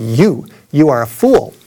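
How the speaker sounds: put-on street preacher voice, slow, weighty, drawn-out. Retelling a loudspeaker man's reply to an atheist heckler, booming voice. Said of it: "he said with a booming voice".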